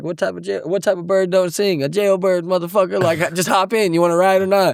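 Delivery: chuckling easygoing wisecrack. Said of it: "he was just laughing and he's like".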